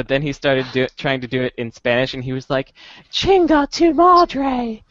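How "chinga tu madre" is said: very high-pitched fake British accent. Retelling how he trash-talked while they were playing, put-on british accent. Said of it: "he kept with his British accent".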